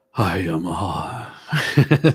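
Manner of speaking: low, deep, dropped voice. Imitating a woman saying hello: imitating her deep voice. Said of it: "said in her deep, her deep voice".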